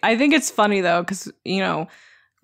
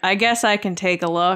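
imitated unwilling tone. Retelling a live event: imitating Harrison Ford's reluctant delivery. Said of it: "the funny thing about the delivery for Harrison".

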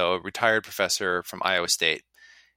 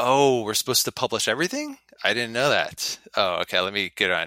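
heavy sardonic sarcasm with feigned naivety; 2 semitones higher than usual. Answering a question about missing firearms studies, sarcastic. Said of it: "of course I'm being sarcastic".

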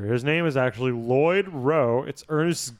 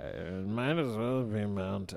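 very soft, deep smoker's voice with vocal fry; 6 semitones lower, 10 dB quieter than usual. Describing a man's voice, the speaker tries imitating his deep smoker's voice. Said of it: "he's just got that deep voice".

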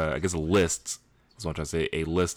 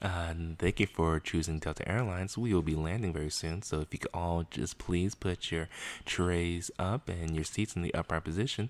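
flight attendant announcement voice, quieter; 5 dB quieter than usual. Asked why they sound like a flight attendant, the speaker does a flight attendant voice. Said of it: "sound like one of those fucking airplane flight attendant".

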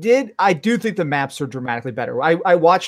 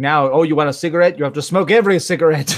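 plain

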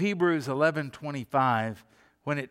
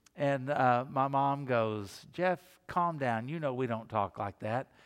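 plain

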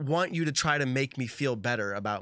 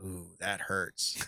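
low, muttered aside to oneself; 6 semitones lower, 7 dB quieter than usual. Retelling what someone says after your putt rolls away: imitating muttering under breath. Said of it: "kind of under their breath".

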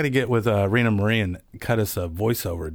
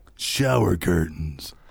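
voiceover announcer delivery, lower pitch; 4 semitones lower than usual. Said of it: "say it in a voiceover way".

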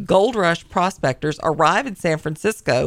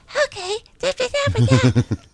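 very high, swooping, squeaky teasing singsong. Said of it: "he would be like".

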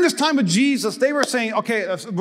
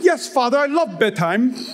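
put-on British accent. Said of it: "Probably have a British accent too".

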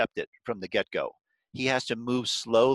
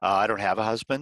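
sly, coy, evasive tone; 2 semitones lower than usual. Retelling the woman's answer about her husband: imitating a sly reply. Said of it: "she says very slyly".

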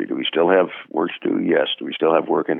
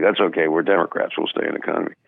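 ordinary talk, nothing marked

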